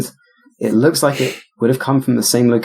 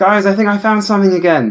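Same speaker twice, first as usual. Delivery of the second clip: fast, high-pitched shouting; 7 semitones higher than usual. A player's character calls down to the rest of the group, shouting down. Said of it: "I guess I'm gonna shout down".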